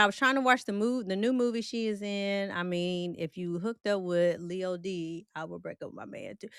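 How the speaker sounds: ordinary delivery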